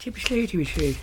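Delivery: exaggerated Irish accent.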